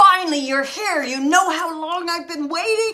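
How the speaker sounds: booming, very loud voice. Recalling a frightening experience, the speaker quotes a voice heard, booming voice. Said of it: "I heard this booming voice".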